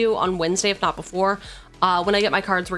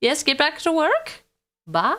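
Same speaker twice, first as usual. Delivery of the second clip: higher voice, breaking and cracking; 8 semitones higher than usual. Signing off to everyone until next time, voice cracking. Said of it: "I don't know why my voice cracked".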